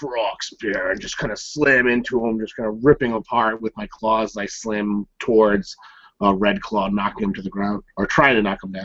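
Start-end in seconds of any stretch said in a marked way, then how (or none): 0.0-0.9 barely above a mutter. Player describing his character's charge at Red Claw, almost under breath. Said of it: "almost under my breath".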